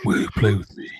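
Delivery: put-on, acted creepy villain voice. Retelling how she asked the question like Tobin Bell: Tobin Bell voice. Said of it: "She said it like Tobin Bell".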